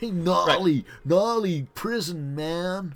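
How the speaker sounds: very high, loud, slow, booming surfer dude drawl. Voicing the prison warden as a surfer dude. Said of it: "Surfer dude, prison ward".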